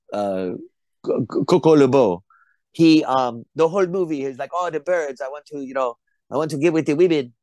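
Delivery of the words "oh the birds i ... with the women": high, put-on French accent. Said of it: "I just use the French accent".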